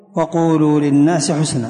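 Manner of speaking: ordinary talk, nothing marked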